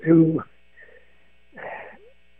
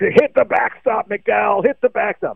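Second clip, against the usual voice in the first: mild mock heckling yell, high and slow. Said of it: "he kept yelling".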